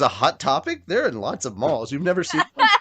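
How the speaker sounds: heavily sarcastic, swooping sing-song delivery. Retelling another speaker's sarcastic remark: imitating Greg being sarcastic. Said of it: "Greg was trying to be sarcastic".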